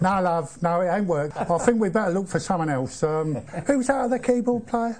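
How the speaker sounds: put-on London accent with London vowels. Retelling what Bob said when he didn't like something, in Bob's London accent. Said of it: "he'd talk to me in London studio speak with a London accent".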